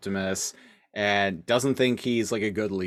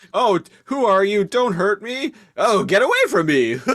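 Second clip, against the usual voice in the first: frantic panicked shrieks, very high and loud; 12 semitones higher, 8 dB louder than usual. Recounting what Nightscream did when he started wigging out, retelling Nightscream screaming. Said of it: "like screaming".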